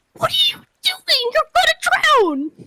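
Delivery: bubbly, very high, swooping sing-song voice. Game master voicing Demurfolk as she finds a player underwater, Demurfolk's bubbly voice. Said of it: "her kind of just like bubbly voice go".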